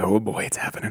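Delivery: ordinary delivery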